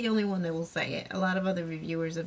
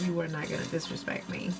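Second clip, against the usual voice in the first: ordinary talk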